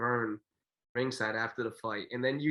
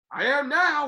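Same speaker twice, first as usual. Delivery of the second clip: shrill, very loud, belted out high; 14 semitones higher, 8 dB louder than usual. Retelling what Don said after being asked if he was okay: Don King impersonation. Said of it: "pretty good Don King impersonation".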